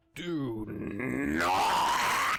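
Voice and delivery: dead, creaky, croaking voice, high and lifeless. Narrating, a voice reaches out from a young girl's throat, croaking and lifeless. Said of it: "A croaking, lifeless almost voice ... demands".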